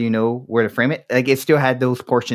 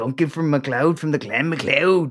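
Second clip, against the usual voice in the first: put-on bad Scottish accent, higher pitch; 4 semitones higher than usual. Answering a scottish listener, the speaker does a bad scottish accent. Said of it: "I'm not supposed to do the accent right".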